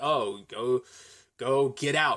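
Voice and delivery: put-on dry deadpan voice. Quoting Wallace shitting on Scott: Wallace's dry delivery. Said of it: "the dry delivery".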